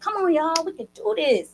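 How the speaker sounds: high-pitched, hollering, rallying encouraging voice. Showing the voice the team needs to hear to reach the end zone: mama voice. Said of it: "And I got that mama voice".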